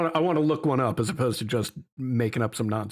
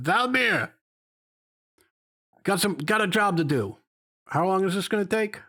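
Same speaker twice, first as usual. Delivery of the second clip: elevated voice, higher, not screaming; 8 semitones higher than usual. Voicing a character calling over his shoulder: raised voice, not screaming. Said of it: "his voice is elevated. It's not like he's screaming".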